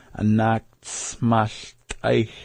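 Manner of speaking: slow, careful delivery, spelled out word by word.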